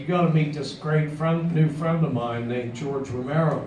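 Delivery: normal talking voice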